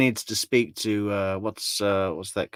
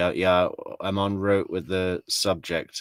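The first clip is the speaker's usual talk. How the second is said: ordinary delivery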